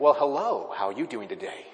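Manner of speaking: courteous, polite telephone-style voice. Showing how people answer the phone right after complaining, in a polite phone voice. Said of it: "our polite phone voice".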